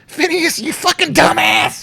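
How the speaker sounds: shrill, very high little gnome voice, laughing. Narrating a scene for the group, voicing the little gnome; laughing gnome voice. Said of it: "the little gnome laughing his up".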